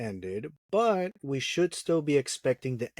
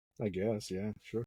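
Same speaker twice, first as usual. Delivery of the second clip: disappointed, let down, much quieter; 4 semitones lower, 8 dB quieter than usual. Told their birthday celebration was moved to the weekend, sounding disappointed. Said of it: "you sound disappointed".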